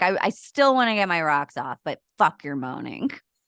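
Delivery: ordinary talk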